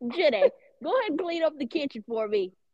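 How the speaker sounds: motherly mom voice, calling out. Asked by friends to give one, the speaker does it: imitating Miller. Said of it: "You should give us one".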